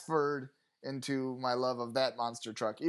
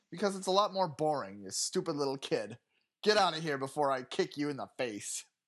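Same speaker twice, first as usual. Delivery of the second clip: mean, nasty, abusive, scolding tirade. Improvised scene, a ticket taker answers a kid's question: mean abusive ticket taker. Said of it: "I was a mean ticket taker".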